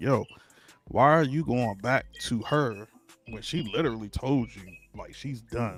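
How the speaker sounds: normal talking voice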